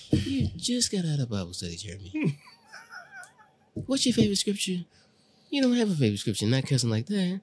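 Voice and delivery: high, widely swinging pitch. Scolding another speaker for cussing after Bible study, imitating Jay's mom. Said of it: "I be imitating, that's Jay's mom".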